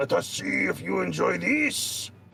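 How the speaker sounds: rasping, rough, high, brutish voice. Voicing the brute taunting the players before attacking: brute voice. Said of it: "the brute ... he says".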